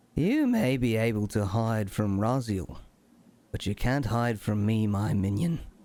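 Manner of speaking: faint, subtle inner voice. Game master voicing a voice in a player's head as he walks away: subtle voice. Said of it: "a subtle voice in your head".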